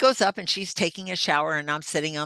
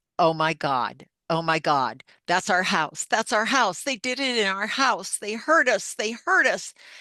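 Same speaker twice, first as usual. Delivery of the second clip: mock hysterical screaming, crying and sobbing cries; 4 semitones higher, 3 dB louder than usual. Retelling what a woman suddenly said on the floor: imitating hysterical screaming, crying. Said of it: "she's screaming and crying and pushing and shoving".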